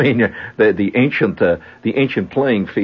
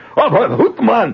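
mock high-pitched, roaring, rowdy football cheer; 14 semitones higher, 3 dB louder than usual. Retelling men in a pub yelling at the TV: imitating Scotsmen yelling. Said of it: "They're yelling things like".

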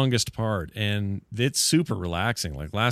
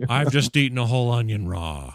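put-on meditation narrator voice. Imitating the meditation app narrator as an ugly bad-breath person. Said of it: "With that, that voice?".

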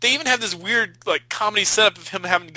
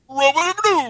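put-on dumb horror villain voice, higher pitched; 8 semitones higher, 4 dB louder than usual. Showing how the movie villain's voice sounds: imitating the Ripper's lousy voice. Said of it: "the voice is seriously like".

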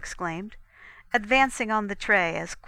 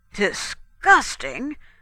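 affronted, loud booming voice with echo; 4 semitones higher, 7 dB louder than usual. After someone calls something disgusting, a man throws the word back, booming, offended. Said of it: "Montelish boomed, offended again".

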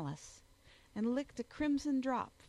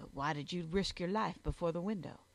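ordinary delivery, nothing marked

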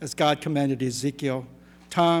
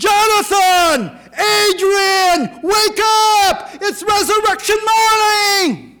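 very loud, very high, booming, drawn-out shout; 10 dB louder than usual. Retelling calling out to the dead at tombstones: retelling own loud shout. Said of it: "I shouted even louder".

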